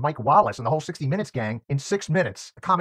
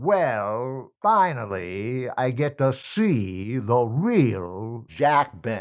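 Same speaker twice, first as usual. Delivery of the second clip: very slow, drawn-out delivery, "see" stretched; 3 semitones lower than usual. Retelling meeting Jack Benny backstage in a Jack Benny impression. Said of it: "I did Jack Benny for Jack Benny".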